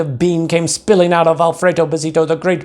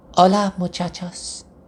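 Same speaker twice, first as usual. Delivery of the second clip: extremely soft, gentle, hushed voice; 5 dB quieter than usual. Reading a children's story aloud, the hero greets everyone in a very soft voice. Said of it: "he said in a muy, muy soft voice".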